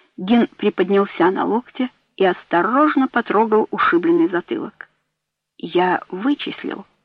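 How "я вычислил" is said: quiet, soft, low volume. Rising on an elbow after being pinned down, a man answers quietly. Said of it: "сказал он тихо".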